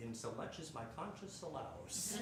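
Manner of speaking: plain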